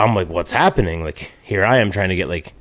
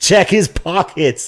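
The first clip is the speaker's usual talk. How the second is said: mock angry shouting, high-pitched; 9 semitones higher, 3 dB louder than usual. Retelling how a woman who accused a man of theft yelled: retelling her yelling. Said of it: "she's like fucking yelling".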